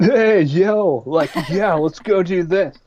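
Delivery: laid-back surfer-dude voice. Giving background on Randy, speaker acts out how he talks: Randy surfer dude voice. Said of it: "He's like he's like a surfer dude".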